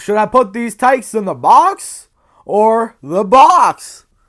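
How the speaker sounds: very loud, high, cracking, breaking voice. Quoting a favourite funny character's line, voice cracking. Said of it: "please ignore the voice crack".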